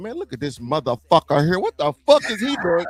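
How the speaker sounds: put-on angry rant full of cussing. Retelling how an aunt cussed at a child walking in: imitating Aunt Jackie going off. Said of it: "just going off".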